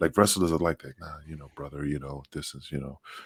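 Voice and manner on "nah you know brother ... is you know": low, much softer whisper. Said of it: "see how I'm whispering?".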